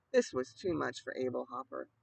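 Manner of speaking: plain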